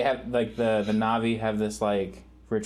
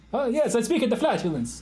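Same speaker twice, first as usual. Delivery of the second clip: put-on Italian accent, pitched high, Italian cadence; 13 semitones higher than usual. Joking around with the others on the show, Italian accent cadence. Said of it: "you did kind of the cadence of Italian accent".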